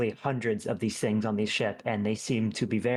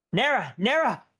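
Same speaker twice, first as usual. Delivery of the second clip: frantic, panicked calling, higher and louder; 12 semitones higher, 4 dB louder than usual. Calling a teammate over the hand radio: panicked calling out. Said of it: "You sound panicked".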